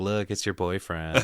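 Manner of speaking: ordinary delivery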